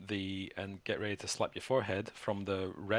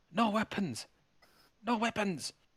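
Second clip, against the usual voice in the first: panicky, very high-pitched frog-creature voice; 13 semitones higher, 4 dB louder than usual. Narrating a frog person who spots you, panicky frog-person voice. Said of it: "he's kind of looking a bit panicky".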